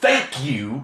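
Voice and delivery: aggressive, hostile, in-your-face tone. Showing how a thank you could sound offensive: aggressive. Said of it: "that's aggressive".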